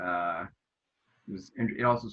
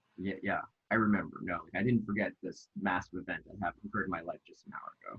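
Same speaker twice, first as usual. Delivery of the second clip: ordinary talk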